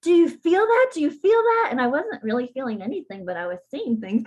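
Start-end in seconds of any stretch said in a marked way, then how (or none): 0.0-1.7 mock, very excited, very high-pitched voice. Recalling what the practitioner said to her, imitating a really excited voice. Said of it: "with this really excited voice say".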